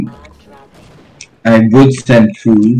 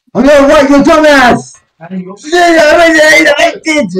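high, way too loud yelling. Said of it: "too effing loud".

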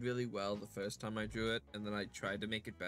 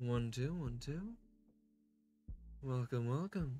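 shaky, trembling, wavering put-on voice; 3 semitones higher than usual. Speaker tries an old voice during a mic check: shaky attempted voice. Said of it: "my voice shakes a bit when I try it".

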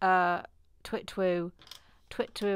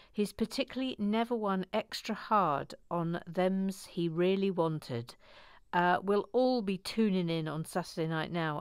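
plain

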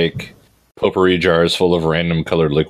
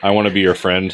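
ordinary talk

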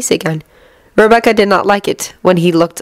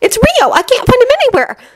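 very high, swooping, frantic, hysterical panicked cry. Calling out to a teacher for help, her voice hysterical. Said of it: "her voice hysteric".

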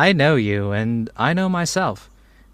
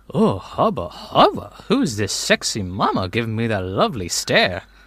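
mock-flirtatious, pretend seductive come-on tone. Pretending to find the other speaker attractive, as asked: mock flirting. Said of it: "at least pretend that I am".

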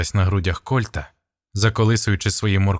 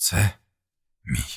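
hoarse, smiling rasp, quieter; 2 semitones lower, 6 dB quieter than usual. Narrator reads the commander's reply to his comrade under fire, rasping with a smile. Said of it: "хрипнув Кольт з усмішкою".

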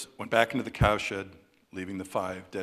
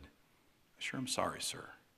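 awfully tender, very soft and very slow; 10 dB quieter than usual. A soldier bends over his dead captain and speaks to him, very tenderly. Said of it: "not in a whisper, but awfully tenderly".

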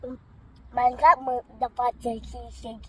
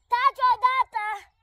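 loud, high-pitched yelling. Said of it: "Nu mai urla".

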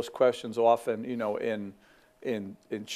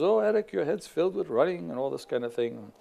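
high-pitched, put-on Scottish brogue; 5 semitones higher than usual. Retelling Eric's upset sister speaking to him in the Scottish highlands; Scottish brogue. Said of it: "some of you could do a better Scottish brogue than me".

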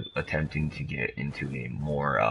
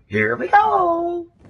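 very high, loud cartoonish squeal with "go" stretched out; 12 dB louder than usual. A streamer sets off in a game, doing a bad Mario impression. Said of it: "like the worst Mario impression I've ever heard".

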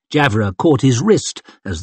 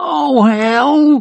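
strangled, hoarse croak, pitched very high; 13 semitones higher than usual. Reading a man just told it is time to pray, croaking. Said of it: "croaked Crandall".

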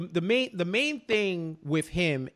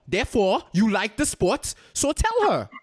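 put-on higher louder Haitian accent. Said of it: "Your Haitian coming out".

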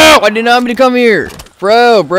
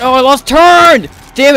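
flustered panicked voice, high and drawn out; 6 semitones higher than usual. Playing a game on stream after a setback, panicking. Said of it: "I'm panicking".

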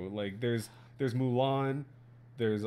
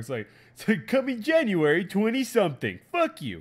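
dramatic announcer voice, louder and slower; 9 semitones higher, 8 dB louder than usual. Speaker imitating a movie trailer for the group, South Park announcer voice. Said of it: "make it sound like that one announcer voice".

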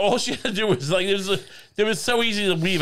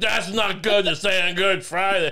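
put-on mumbled speech. Imagining how the other speaker's mother said it: imitating a mumbling mother.

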